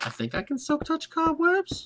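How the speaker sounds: incredibly high, swooping, questioning tone. Speaker planning a Halloween build wonders aloud, in a questioning, incredibly high voice. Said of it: "He said questioningly in an incredibly high voice".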